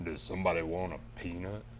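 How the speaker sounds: as deep as possible, very quiet and soft. Friends taking turns saying a movie line, going as deep as possible. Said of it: "get as deep as you can and say".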